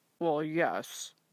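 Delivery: low words mumbled half under the breath. Reading a story aloud, Pa answering Ma: mumbling. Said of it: "he mumbled".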